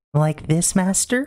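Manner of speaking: put-on shrill little-girl voice, very high and loud. Trying a new voice on request: soft high-pitched young girl voice. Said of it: "go softer, a little more high-pitched, like a young girl".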